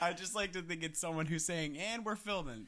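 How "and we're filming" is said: pitched-up, blocked-up, congested stuffy-nose voice. Imagining someone announcing filming, imitating a stuffy nose. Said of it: "they have, like, a stuffy nose".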